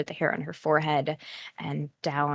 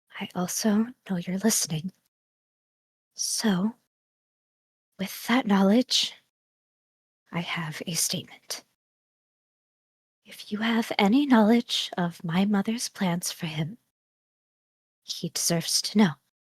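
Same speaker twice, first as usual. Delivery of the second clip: low, hushed voice just above a whisper; 5 semitones higher than usual. Speaking in character into the dark near someone sleeping: low, just above a whisper. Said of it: "her voice is low, maybe just above a whisper".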